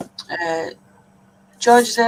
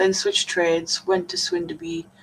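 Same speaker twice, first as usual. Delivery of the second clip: ordinary delivery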